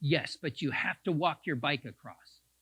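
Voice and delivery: put-on sharp, severe scolding bark. Retelling what a passing cyclist said: imitating a sharp scolding bark. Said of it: "she kind of barked at me".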